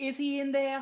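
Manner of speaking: put-on older woman's very high, loud Boston accent. Retelling what an older lady on set asked, in an older lady's Boston accent. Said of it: "this lady in her Boston accent".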